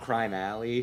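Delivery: ordinary delivery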